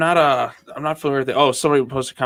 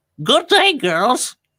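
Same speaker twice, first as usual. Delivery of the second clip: put-on cartoon voice, pitched very high; 13 semitones higher than usual. Taking a turn doing an impression, in a Mayor of Townsville voice. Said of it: "I love him as the mayor of Townsville. ... here's mine".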